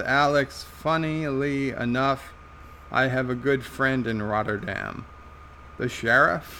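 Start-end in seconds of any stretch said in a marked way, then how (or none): none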